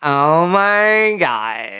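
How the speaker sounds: Valley accent with swoops. Starting an accent guessing game with the other speaker: San Fernando Valley accent. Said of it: "The Valley".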